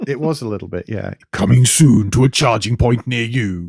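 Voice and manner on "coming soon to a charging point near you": loud movie trailer announcer voiceover delivery. Podcast host continues the bit after his co-host praises it: movie announcer voice. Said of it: "movie announcer voice there that you used".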